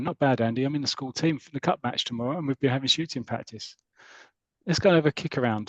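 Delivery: ordinary delivery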